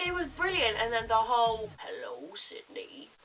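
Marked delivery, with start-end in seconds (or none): 1.8-3.1 bad put-on creepy killer voice. Quoting the killer's phone line from a slasher film: bad creepy killer voice. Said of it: "I can't do it very well".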